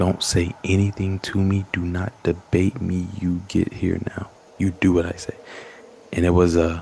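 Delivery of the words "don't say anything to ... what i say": imitated sharp, commanding tone. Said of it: "It was a sharp tone of just".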